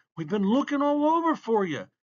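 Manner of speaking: very high-pitched, blurted out. Piper, rushing up to him in the library with the McNabb boys, blurted out. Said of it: "blurted Piper".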